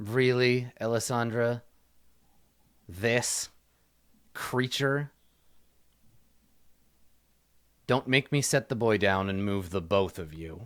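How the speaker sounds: scornful, contemptuous, sneering tone. Voicing a man confronting a woman and the one hiding behind her, sneering. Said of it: "he sneers and he he says".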